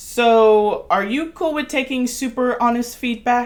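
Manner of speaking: uncertain, awkward delivery.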